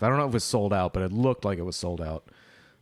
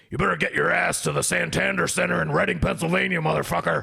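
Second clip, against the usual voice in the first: put-on gruff, shouting talk-radio voice, pitched higher; 9 semitones higher than usual. Retelling voicemails left for a friend in Alex Jones voice. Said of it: "leaving him messages in Alex Jones' voice".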